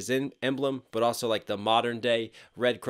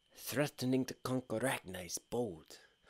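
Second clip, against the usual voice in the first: very quiet, bad put-on Norwegian accent in English; 10 dB quieter than usual. Repeating a line from a series whose accent you love, in a terrible imitation of a Viking accent. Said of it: "That's a terrible reiteration".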